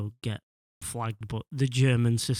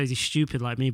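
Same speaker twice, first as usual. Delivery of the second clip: normal talking voice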